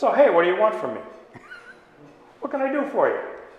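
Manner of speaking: lively voice swooping and bouncing around. Retelling how Jesus spoke to a blind man by the roadside: imitating Jesus. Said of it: "the tone of voice was more like".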